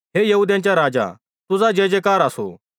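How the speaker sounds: plain reading voice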